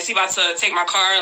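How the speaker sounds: ordinary delivery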